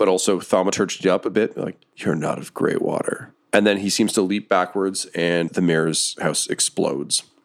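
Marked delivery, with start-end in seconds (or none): 2.0-3.3 soft, breathy whisper with a carrying quality. Narrator voicing a man standing on top of the mayor's mansion; very soft voice. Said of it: "You can just hear a very soft voice".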